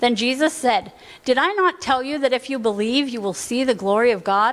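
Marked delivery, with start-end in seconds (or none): 1.2-4.5 acted-out, slightly snotty, condescending, snide tone. Reading aloud Jesus' reply to Martha from scripture: snotty tone. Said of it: "I said that kind of snotty".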